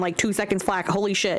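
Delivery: ordinary talk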